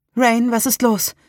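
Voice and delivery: high voice, thick and choked with panic. Someone asks the narrator what is wrong as she packs her rucksack: choked with panic. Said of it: "Salems Stimme klang vor Panik ganz belegt".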